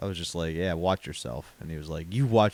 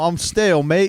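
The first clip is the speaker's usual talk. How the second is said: put-on dull Australian accent, higher and louder; 11 semitones higher, 10 dB louder than usual. Riffing on the word stalemate as a boring australian guy would. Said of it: "that sounds like a boring Australian guy".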